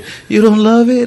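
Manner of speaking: put-on sobbing speech. Retelling how a girl cried over a gift, quoting her: imitating someone bawling. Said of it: "like just bawling".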